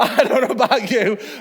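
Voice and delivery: speaking while continuously laughing. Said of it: "I'm still laughing now on that joke".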